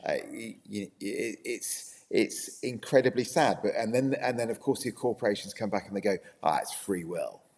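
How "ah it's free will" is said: casual, put-on American accent. Imitating corporations replying to criticism: American accent. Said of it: "I don't know why I said that in an American accent".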